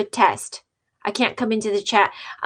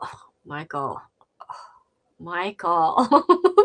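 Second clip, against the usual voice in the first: fed-up, very slow, dragging, swooping annoyed tone; 4 semitones lower than usual. Showing how people say the name when angry: imitating someone pissed off. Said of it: "if they're pissed at Michael".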